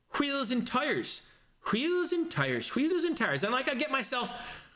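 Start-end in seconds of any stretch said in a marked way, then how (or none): 0.1-3.4 stock Irish accent. Speaker shows how they get into an irish accent by repeating a phrase, irish accent. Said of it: "I know how to do an Irish accent".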